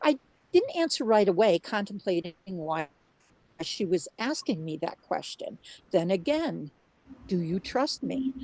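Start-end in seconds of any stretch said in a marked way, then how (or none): 7.3-8.3 mock profoundly caring, gentle, soothing voice. Recounting a divine voice asking her again, retelling in a soothing mama voice. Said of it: "No booming judgmental voice, simply a profoundly caring one".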